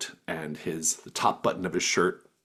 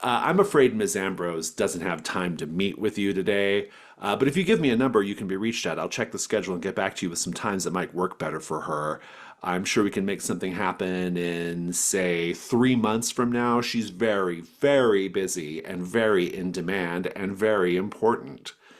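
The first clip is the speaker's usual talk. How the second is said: usual speaking voice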